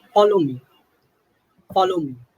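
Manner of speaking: loud, authoritative, commanding leader-like voice. Speaker demonstrates how a group leader tells members to follow: authoritative command. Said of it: "say it in a very authoritative way".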